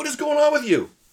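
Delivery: high-pitched, baffled, exasperated disbelief.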